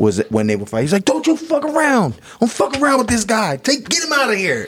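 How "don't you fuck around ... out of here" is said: acted, very high yelled curses. Retelling a boxing trainer's corner yelling during a fight: imitating Emanuel Steward yelling and cursing. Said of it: "yell and curse".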